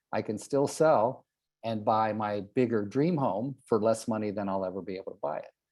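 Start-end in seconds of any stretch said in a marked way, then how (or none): none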